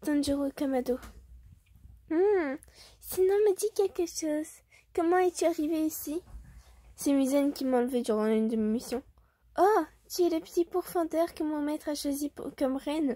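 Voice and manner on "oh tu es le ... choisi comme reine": convincing, really girly put-on female voice. Voicing a character addressing the captive demon slayer, really girly woman's voice. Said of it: "je fais la voix d'une meuf".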